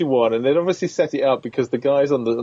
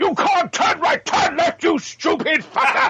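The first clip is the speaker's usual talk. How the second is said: half-shouted, mild yell with very high pitch. Imitating the sat nav that Brian Blessed voiced: imitating Brian Blessed shouting. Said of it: "at the top of his lungs".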